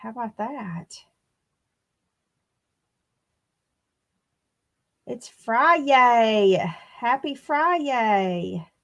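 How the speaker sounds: squeaky, easy chatty voice, Friday drawn out. Greeting everybody while making biscuits and coffee, squeaky voice. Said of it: "I got squeaky voice today".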